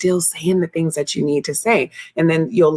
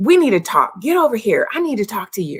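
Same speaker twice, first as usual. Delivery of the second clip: demanding, pitched-up, commanding tone; 5 semitones higher than usual. Showing what people say when upset, before a talk on tactful communication, commanding voice. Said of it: "use that commanding voice".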